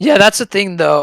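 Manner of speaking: voice breaking. Agreeing with another speaker in a group discussion, voice cracking. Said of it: "that was a really bad voice crack".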